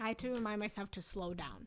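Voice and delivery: fast, rushed speech. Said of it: "I'm still talking too fast".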